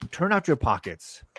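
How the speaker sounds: wary, distrustful, suspicious tone. Voicing a character who demands a player turn out pockets: suspicious tone. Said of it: "So she's very suspicious, and she says".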